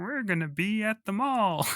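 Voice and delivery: high, drawn-out, stretched frog-puppet voice. Showing the best impression possible of a badly dubbed ad: Kermit voice. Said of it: "as good a Kermit impression as I could do".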